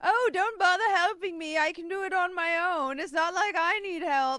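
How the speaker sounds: very high, loud, mock-martyr sarcastic drawl. Imitating how another player says he needs no help: imitating sarcastic refusal of help. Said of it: "or is he being sarcastic?".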